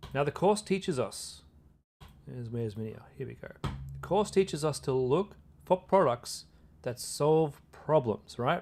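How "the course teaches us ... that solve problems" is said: very slow, drawn-out, deliberate, weighted emphasis. Speaker explaining to viewers what the course teaches, said really slowly. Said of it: "I said it really slowly".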